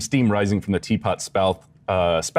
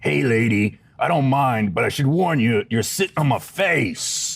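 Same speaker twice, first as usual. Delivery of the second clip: harsh, rough-edged, pitched-up voice; 5 semitones higher than usual. Narrating a scene, voicing a living chair someone just sat on, in a rough voice. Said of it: "you hear a rough voice".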